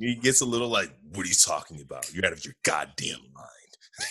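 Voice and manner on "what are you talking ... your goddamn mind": very low, bassy voice in bass register. Retelling a movie scene, quoting Batman: bassy Pattinson Batman voice. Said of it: "this is where his voice gets a little bassy".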